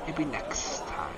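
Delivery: slow, soft, looming snake woman voice.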